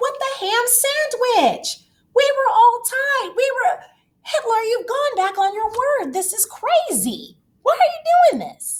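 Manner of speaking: high, hurt, outraged wail.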